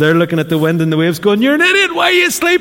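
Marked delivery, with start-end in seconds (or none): 1.4-2.6 put-on very high, panicked, frantic outburst. Retelling the disciples in the storm waking Jesus: imitating panicked disciples. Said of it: "They're freaking out".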